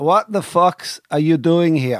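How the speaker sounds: put-on Dutch accent. Urging Hector to repeat it, speaker says the line himself, Barney impression, Dutch accent. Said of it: "And do it again".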